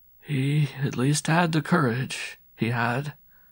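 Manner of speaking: murmured very slowly, word by word. A man nearly knocked over by a street urchin shrugs warily, murmuring.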